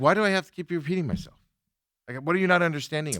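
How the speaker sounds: mock-frustrated tone. Retelling a phone call with a lady, reenacting a frustrated complaint. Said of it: "I got frustrated with the one lady".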